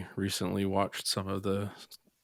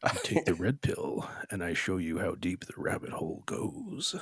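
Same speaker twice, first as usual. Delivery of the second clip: slow, deliberate delivery, every word drawn out. Doing a quick movie-line impression for the co-host: Morpheus voice. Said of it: "channel my inner Morpheus".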